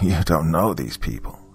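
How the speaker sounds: ordinary delivery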